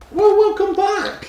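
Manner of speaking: voice cracking, very high and loud. Welcoming viewers back before watching a film, voice cracking up high. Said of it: "Did your voice just break?".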